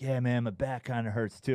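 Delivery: imitated stoned man's voice. Retelling a ski accident, the speaker quotes the ski patroller: imitating a stoned man. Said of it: "he's so stoned".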